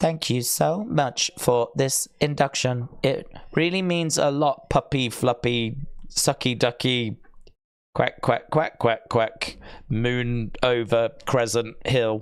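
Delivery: robotic, warped, distorted computer voice. Speaker imagines how it would sound: Anonymous computer voice. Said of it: "Anonymous with, like, you know, the um, computer voice".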